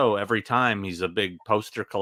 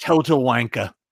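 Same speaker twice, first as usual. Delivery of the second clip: put-on English accent, higher and louder; 4 semitones higher, 7 dB louder than usual. Retelling what the promoter said in the green room: english accent. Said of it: "your English accent's way better than mine".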